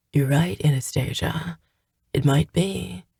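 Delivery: gentle, soft, raspy gravelly voice. Narrator reads a man answering a woman who blames herself, in a soft, gravelly voice. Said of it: "replied in a soft, gravelly voice".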